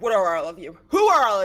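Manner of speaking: loud, angry, forceful voice.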